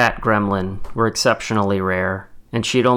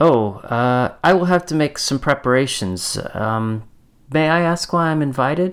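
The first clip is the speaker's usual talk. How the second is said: strained, put-on polite pleasant tone, pitched up; 5 semitones higher than usual. Reading a woman's reply to a man asking about the event, with forced pleasantness. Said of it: "forcing pleasantness to her tone".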